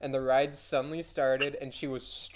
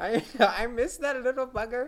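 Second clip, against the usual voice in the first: put-on grandma voice, higher; 10 semitones higher than usual. Acting out an imagined grandma planning a day out: imitating a grandma. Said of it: "imagine grandma's like".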